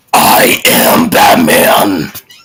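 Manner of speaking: put-on loud, wheezy voice. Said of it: "the live action version of Batman where he sounds like he's having asthma".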